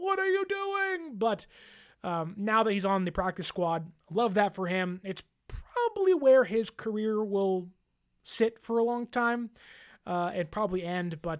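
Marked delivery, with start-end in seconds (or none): 0.0-1.2 pretend angry shouting and screaming, higher pitch. Picturing the team keeping him as main backup: mock yelling and screaming. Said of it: "then I'm yelling and screaming".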